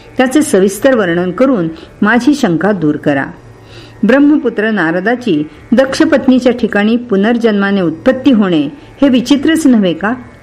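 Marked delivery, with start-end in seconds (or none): none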